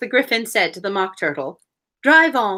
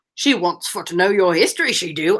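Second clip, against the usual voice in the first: loose, made-up British character voice; 2 semitones lower than usual. Doing a voice of someone trying for a British accent: put-on British accent. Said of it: "So I'm just doing a voice".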